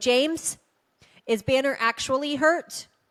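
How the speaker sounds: play-acted yell, called out as if far away. Retelling yelling up the stairs to James: imitating own yell upstairs. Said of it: "I start yelling up at James".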